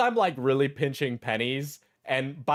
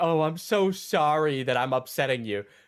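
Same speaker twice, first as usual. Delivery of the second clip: smug, self-satisfied, insincerely sorry tone. Mocking another speaker's apology by repeating it: imitating a smug apology. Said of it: "this guy's such a smug fuck".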